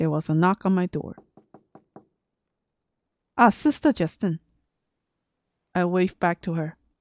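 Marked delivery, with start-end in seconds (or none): none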